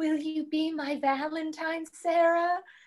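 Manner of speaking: eerie, creepy delivery. Retelling the ending as he gets away and speaks to sarah; retelling a creepy line. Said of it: "he says really creepy".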